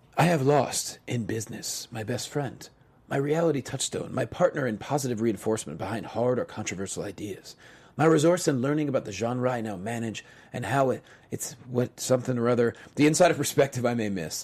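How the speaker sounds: quiet, somber voice. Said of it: "I'm gonna say it in a very, um, somber tone".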